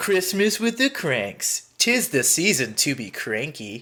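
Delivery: slow, silly put-on funny voice. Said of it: "you can emulate what I do".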